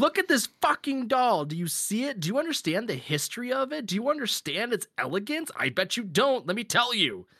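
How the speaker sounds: put-on fervent, worked-up near-yell, very high. Acting out a man giving a tour to a note-taking visitor, retelling a passionate yell. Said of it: "it looks like he's yelling at the poor person".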